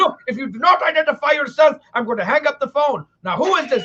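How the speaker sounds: put-on really mad father voice, losing patience. Retelling a phone call, imitating the speaker's dad getting mad at the caller. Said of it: "He got really mad".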